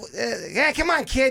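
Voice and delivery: clumsy Boston accent. With others trying accents, the speaker tries again: a bad Boston accent. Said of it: "I was trying to do Boston".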